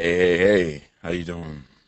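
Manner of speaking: very deep, low bass voice. Co-host greeting the show's host while sick, in an extra deep voice. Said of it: "whole show with that voice?".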